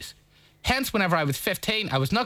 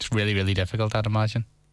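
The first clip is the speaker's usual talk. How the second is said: low, lightly sarcastic aside; 5 semitones lower than usual. Talking with someone about a tv show on tonight: sarcastic. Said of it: "is that sarcasm in your voice?".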